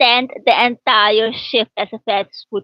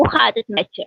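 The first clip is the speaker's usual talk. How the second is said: Dutch with Surinamese accent; 5 semitones higher than usual. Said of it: "Netherlands they talk they talk like this".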